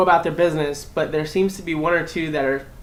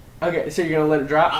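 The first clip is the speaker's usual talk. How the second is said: ordinary delivery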